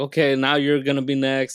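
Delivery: ordinary delivery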